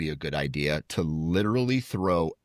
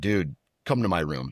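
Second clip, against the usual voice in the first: mock angry, demanding voice. Retelling the angry roommate kicking at the door: imitating an angry roommate. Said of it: "And he's pissed".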